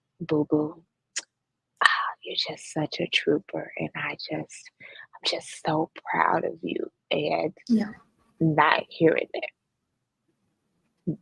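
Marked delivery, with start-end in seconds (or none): 0.2-6.9 mock-soft, gentle, softened put-on voice. Describing how the speaker's dad would react, the speaker imitates him: imitating dad's softened voice. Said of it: "his voice would go like this".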